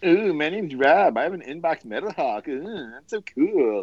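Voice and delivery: sarcastic, insincere, gushing fake admiration. Mocking another speaker who is showing off a toy: insincere mock impression of Rob. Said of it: "did I not sound sincere".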